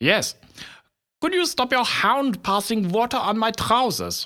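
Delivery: put-on English with German accent. A pathologist answers a question, in a German accent. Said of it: "speak with a German accent".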